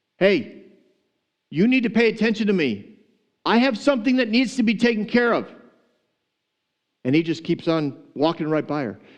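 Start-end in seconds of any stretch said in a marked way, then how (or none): 0.2-5.5 put-on, high, insistent shouting. Retelling a parable where the widow yells at the judge: imitating the widow yelling. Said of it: "she starts to, uh, yell at him".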